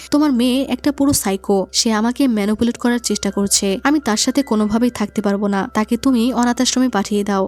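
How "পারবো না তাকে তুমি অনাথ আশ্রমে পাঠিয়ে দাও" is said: ordinary delivery, nothing marked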